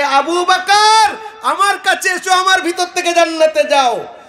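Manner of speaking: herald-style proclaiming voice.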